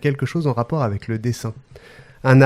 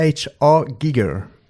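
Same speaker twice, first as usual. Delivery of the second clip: mixed English and Austrian accent. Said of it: "T'as vu cet accent là?".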